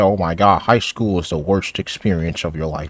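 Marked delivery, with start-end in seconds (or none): none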